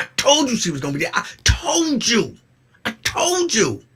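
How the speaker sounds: put-on shrill, swooping, loud, aggressive gloating. Retelling what he told her when the character died: imitating own aggressive gloating. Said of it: "Why are you so aggressive?".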